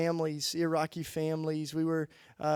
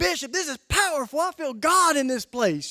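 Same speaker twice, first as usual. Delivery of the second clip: high, loud, thrilled, excited gush. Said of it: "I'm real excited at this point".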